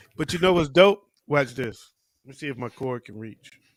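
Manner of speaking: ordinary talk, nothing marked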